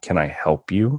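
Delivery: very stern, severe tone. Retelling a game store clerk coming up behind him, imitating a stern clerk. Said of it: "he says very sternly".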